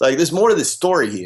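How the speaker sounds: put-on New Jersey accent, rattled off quickly. Retelling what Anthony said about his client, in Anthony's New Jersey accent. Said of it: "in Anthony's dialect with his his New Jersey accent".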